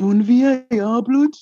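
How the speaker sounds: put-on Birmingham accent. Repeating a footballer's quoted tweet when asked: Brummie accent. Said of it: "where's your Brummie accent, man?".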